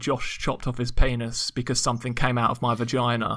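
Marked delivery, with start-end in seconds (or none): none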